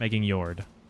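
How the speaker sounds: stated flatly, low, with a falling close.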